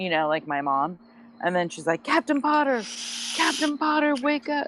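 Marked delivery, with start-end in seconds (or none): 2.0-4.7 mock, very high, hollered screaming. Speaker retells a woman screaming at a man to wake him, imitating someone screaming. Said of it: "she was screaming at him".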